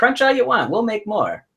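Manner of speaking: high voice with big swooping pitch swings. Quoting an old chip commercial line, doing a Jay Leno impression. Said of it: "Is that a pretty good Jay Leno there".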